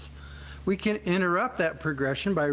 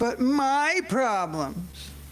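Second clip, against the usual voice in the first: high, whiny, complaining voice; 7 semitones higher than usual. Speaker says the title of their talk in a whiny complaining voice. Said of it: "I use that voice intentionally because I hear it in my head. The whiny voice, the complaining voice".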